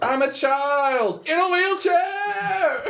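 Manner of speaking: put-on very slow, loud yell, child drawn out. Voicing a child in a wheelchair being pushed down a hallway: yelling in character as Derry. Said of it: "as Derry yells".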